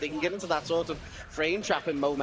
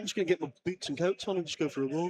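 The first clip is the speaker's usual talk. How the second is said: put-on southern Liverpool accent. Showing how the Southern Liverpool accent sounds, after explaining Liverpool's accents: Southern Liverpool accent. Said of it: "which sounds like this".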